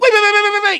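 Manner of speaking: very high, loud voice cutting in, repeating. Mocking an orbiter who comes on and tries to talk like Destiny: Destiny impression. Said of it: "he starts trying to talk like Destiny".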